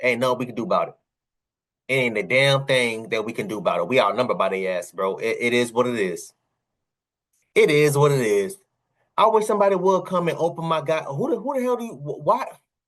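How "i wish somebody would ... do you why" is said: high, flustered stutter, tripping over words. Ranting about being outnumbered, the speaker gets stuttering, flustered. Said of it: "I'm stuttering, so I, I now, now now I'm getting flustered".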